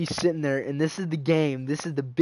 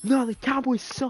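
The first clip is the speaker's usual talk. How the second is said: very high, worked-up, angry outburst; 11 semitones higher than usual. Retelling being told to calm down: imitating own angry outburst. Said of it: "Bro, calm down".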